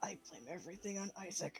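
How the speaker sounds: low, very quiet grumbling under the breath. Voicing a character complaining about someone absent: grumbling in character. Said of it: "Everly's just gonna grumble".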